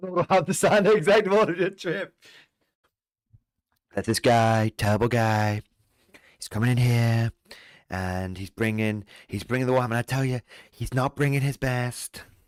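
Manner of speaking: passable camp presidential caricature, put-on voice. Joking with the others: passable Donald Trump impression. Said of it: "That was a passable impression".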